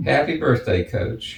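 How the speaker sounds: ordinary talk, nothing marked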